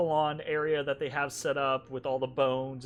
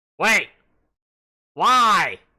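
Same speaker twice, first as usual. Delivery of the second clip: very loud, high, wary, suspicious goblin voice; 6 semitones higher, 14 dB louder than usual. Voicing a goblin who grows suspicious when a player walks off: suspicious goblin voice. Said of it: "He's kinda suspicious of you when you do that".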